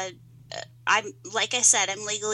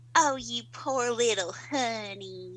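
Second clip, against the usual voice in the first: put-on sugary, sweetly condescending, patronizing grandmotherly tone; 2 semitones higher, 5 dB quieter than usual. Imitating how grandma says bless your heart: imitating grandma, patronizing. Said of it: "means it in a slightly patronizing way".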